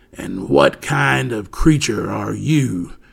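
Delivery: gravelly, rough, creaky hairy beast voice. A narrator reads a hairy monster questioning the boy Oliver, in a gravelly monster voice. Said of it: "came the gravelly voice again".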